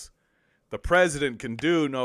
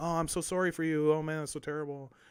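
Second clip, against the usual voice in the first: comforting, consoling, sympathetic there-there tone; 2 semitones higher, 8 dB quieter than usual. Imitating someone who hugs you and hears your problems: imitating comforting sympathy. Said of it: "come over and give you a nice hug and, like, hear your problems and be like".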